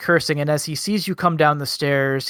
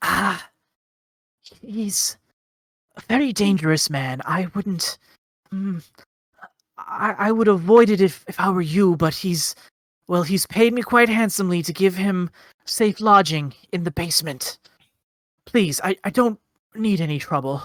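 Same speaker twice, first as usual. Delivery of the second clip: rasping stage whisper, woman's voice; 4 semitones higher than usual. A game master voices a deaf shopkeeper character, loud, harsh whisper. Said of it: "speaks in sort of a loud, harsh whisper because she is quite deaf".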